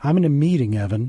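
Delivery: ordinary delivery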